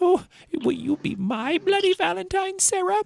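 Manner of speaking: strange, weird, very high put-on voice. Retelling a movie ending where a character escapes: imitating a character's weird voice. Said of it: "the weirdest fucking voice comes out of his face".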